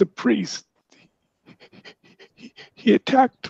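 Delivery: put-on crying tone. Retelling a scene where a character speaks while crying, retelling a line while crying. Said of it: "he's sort of crying now".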